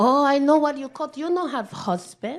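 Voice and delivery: a different woman's voice. Retelling what the other driver said after stopping her car: imitating the other driver. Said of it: "She goes".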